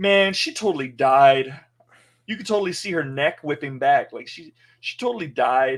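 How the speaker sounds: heavy sarcasm, acted, fake-earnest, not meant. Retelling a first-time viewer's remark about a character's death, imitating a sarcastic remark. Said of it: "she's all sarcastic about it".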